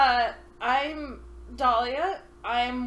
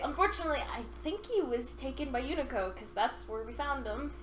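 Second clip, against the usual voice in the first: plain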